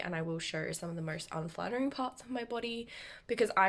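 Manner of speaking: ordinary talk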